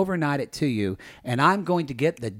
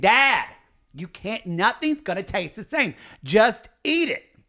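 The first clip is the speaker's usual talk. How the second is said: put-on scream, high and pitched-up; 6 semitones higher than usual. A son recalls arguing with his dad, retelling screaming at him. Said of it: "I'm screaming at my dad saying".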